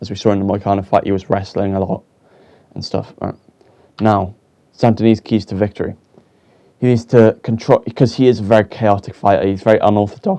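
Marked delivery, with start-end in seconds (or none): 9.5-10.4 voice breaks partway through the words. A commentator previewing a fighter's keys to victory, voice cracking. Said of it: "oh voice crack".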